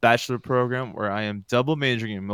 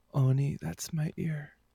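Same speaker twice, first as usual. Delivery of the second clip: slow, sultry, seductive come-hither voice; 4 semitones higher, 7 dB quieter than usual. Repeating a listener's name after being asked to: sexy voice. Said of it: "Try to say that with a sexy voice".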